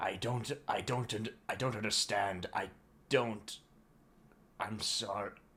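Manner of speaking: scared, faltering, shaking stammer with repeated words. Shaking and wide-eyed, the listener stammers to the bots; frightened, shaking stammer. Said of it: "seeing your eyes still wide as you shook".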